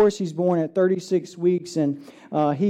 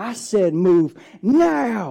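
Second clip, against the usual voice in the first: mock very slow bellow, word now long drawn out; 2 semitones higher than usual. Retelling how she yelled at everyone in the room to move, retelling a top-of-lungs yell. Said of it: "she like yells at the top of her lungs".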